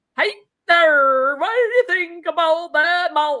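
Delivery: put-on Yooper accent, Michigan Upper Peninsula style. Joking about how saying fjord changes your accent, put-on Upper Peninsula accent. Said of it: "You're sounding like you're from the UP".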